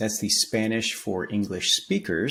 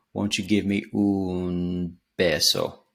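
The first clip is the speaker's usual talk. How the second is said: slow, drawn-out un in un beso. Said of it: "he's kinda dragging out the un".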